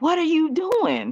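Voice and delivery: screaming cry, pitched very high. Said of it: "you're screaming at the sky".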